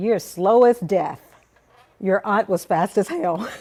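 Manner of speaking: man's voice, loud and blunt. Retelling what a man said after a fall: Mister Temple voice. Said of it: "and I'm talking in his voice".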